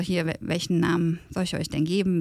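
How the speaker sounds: ordinary delivery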